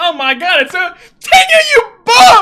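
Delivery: very loud, very high, shrill screaming yell, climbing. Reacting to a fight while watching, yelling. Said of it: "Sorry, I didn't mean to yell".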